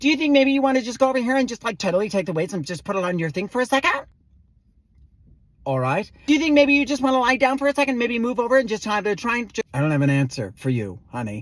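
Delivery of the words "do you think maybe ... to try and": put-on fast Valley Girl uptalk, every line rising. Retelling how a woman at a massage kept talking, the speaker does fast valley girl uptalk. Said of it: "she also had like a Valley Girl thing, so everything went up at the end".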